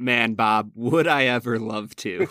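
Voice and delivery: sarcastic tone. Agreeing when asked for a spoiler-filled movie recap: sarcastic. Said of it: "There he is".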